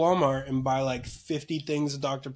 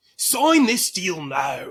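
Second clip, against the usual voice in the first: put-on, lordly olde-English accent; 4 semitones higher than usual. Imagining making deals in Pepsi armor, the speaker speaks in an old English accent. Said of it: "only speaking in a old English accent?".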